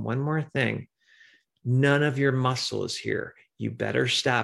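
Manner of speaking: stern, serious voice. Retelling the warning they gave a man who kept spitting, retelling a stern warning. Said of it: "And I said it in a stern voice".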